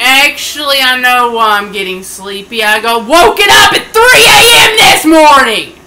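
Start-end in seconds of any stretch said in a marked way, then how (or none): 2.6-5.7 high, loud, pissed-off yelling outburst. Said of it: "Sorry if I sounded pissed off".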